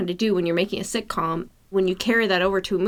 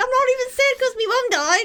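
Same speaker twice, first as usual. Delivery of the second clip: ridiculous put-on Cockney kid voice, very high. Recalling a movie scene seen years ago, acting out a ridiculous Cockney psychopath kid. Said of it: "elevated to this Cockney, ridiculous psychopath kid being like".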